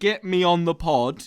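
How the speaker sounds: high, stretched-out, pleading scream. Retelling what a listener kept shouting: imitating someone screaming. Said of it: "Him screaming".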